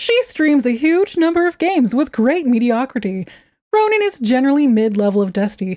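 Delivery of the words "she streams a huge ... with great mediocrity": put-on, pitched-up sales-pitch infomercial announcer voice. Plugging a streamer's channel: put-on infomercial announcer voice. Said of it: "I'll do the infomercial voice".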